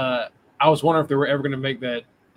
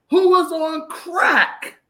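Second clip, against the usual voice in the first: loud, very high, very slow, stretched-out booming holler; 6 dB louder than usual. Doing a voice for a joke about someone on crack: Stephen A voice. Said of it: "in my Stephen A voice".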